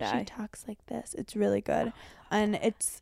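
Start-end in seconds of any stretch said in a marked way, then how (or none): 0.0-1.1 put-on timid little woman voice, quieter. Describing a woman in a show she watched: imitating a timid little woman. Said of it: "such a, like, timid little woman".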